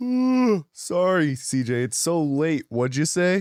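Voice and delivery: put-on drowsy voice. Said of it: "I'm so sleepy".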